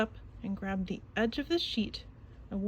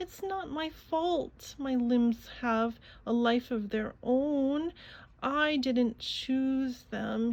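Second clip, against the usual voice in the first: slow, drawn-out, grumbling tone; 3 semitones higher than usual. Narrator reading Frankenstein's cat after the butler shows him out, grumbling Frankenstein's cat voice. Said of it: "and clearly Frankenstein's cat was no ordinary cat. / But [name] was determined to make some friends with the stinky spring in his and with a stinky spring in his stuttering / said [name]".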